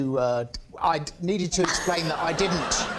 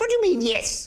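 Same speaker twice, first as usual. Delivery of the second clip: very high-pitched, regal, royal voice. Retelling a meeting, quoting what she said: Princess Margaret voice. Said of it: "in a sort of very Princess Margaret sort of voice".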